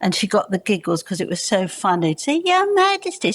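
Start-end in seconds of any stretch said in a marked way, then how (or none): 2.4-3.3 silly, very high-pitched squeaky voice. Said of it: "she put on a silly voice".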